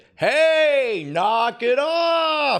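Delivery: genuine shout, high, slow and forceful.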